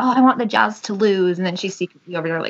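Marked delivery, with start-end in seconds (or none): 0.0-1.4 mock playful, teasing, needling tone. Imitating a daughter who teases her mom: imitating a teasing daughter. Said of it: "she'll tease me and be like".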